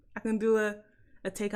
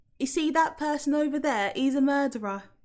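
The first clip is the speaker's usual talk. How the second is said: mild, slight northern English accent, higher pitch; 5 semitones higher, 3 dB louder than usual. Speaker trying out different accents, slight northern english accent. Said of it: "That's like a slightly northern English accent".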